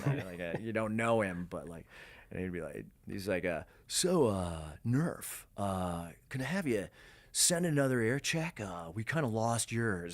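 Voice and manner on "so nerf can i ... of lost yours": put-on casual, easy voice, hesitant and stop-start. Retelling a call back from f, imitating his deep voice. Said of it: "spot on F impression".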